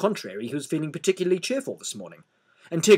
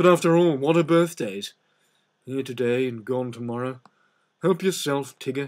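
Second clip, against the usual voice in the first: put-on glum, downcast, gloomy old donkey voice. Narrator reads the donkey offering his thistles to Tigger, gloomy old donkey voice. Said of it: "and [name] explained to [name] that he mustn't mind what [name] said because he was always gloomy. / he asked".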